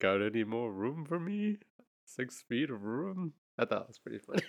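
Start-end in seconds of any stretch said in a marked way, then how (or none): 0.0-3.3 slow, drawn-out comic voice. Retelling a gingerbread man bit on the show: Spice Adams impression. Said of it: "That was a great impression".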